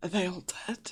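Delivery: rough, hoarse, coarse croaking voice. Voicing a prisoner who asks whether they are all dead: coarse croaky voice. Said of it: "very kind of coarse, like, uh, croaky voice".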